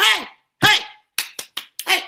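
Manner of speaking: very high, ragged, rough screaming. Retelling going out on the porch at night after hearing screaming: retelling a scream. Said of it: "I'm screaming".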